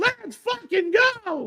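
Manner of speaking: very high voice with a puberty-style crack. Already losing their voice in the first match, cheer with a cracking voice. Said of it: "Where did my voice ever sound like that".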